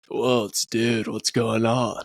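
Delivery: full put-on surfer dude accent. Imitating British people doing an American accent: imitating a put-on surfer dude accent. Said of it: "Valley Girl or, like, Surfer Dude".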